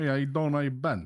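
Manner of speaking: mock New York-Boston-Jersey accent. Asked to hear it, trying a put-on New York, Boston and New Jersey mix accent. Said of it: "I could kind of do one".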